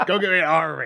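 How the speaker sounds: odd, growly mock pirate voice. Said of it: "I don't know why I said that so weird".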